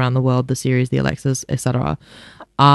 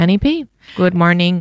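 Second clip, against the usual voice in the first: put-on robot voice, pitched up; 5 semitones higher than usual. Giving your name and saying good morning on air: put-on robot voice. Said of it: "You've got the robot voice now".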